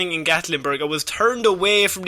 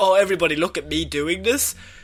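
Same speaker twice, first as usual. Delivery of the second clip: mock cocky, boastful show-off voice.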